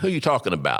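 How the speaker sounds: ordinary delivery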